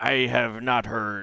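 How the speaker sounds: put-on pirate accent, piratey voice. Answering a quoted question, slipping into a pirate accent. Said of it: "I keep slipping into a pirate accent".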